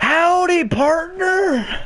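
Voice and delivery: deer creature voice, yelling.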